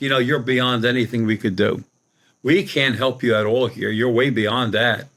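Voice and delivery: ordinary talk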